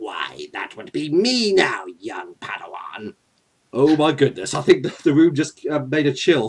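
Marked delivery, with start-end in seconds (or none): 0.0-3.1 low, chilling voice. Introducing the next reader for the reading: Emperor Palpatine voice. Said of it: "say hi to Emperor Palpatine from the Star Wars franchise".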